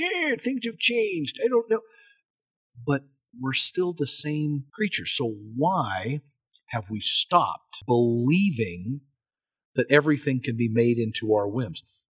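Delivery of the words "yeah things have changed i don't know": put-on very high-pitched elderly voice. Mimicking what each generation says, in an old person voice. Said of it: "says in their old person voice".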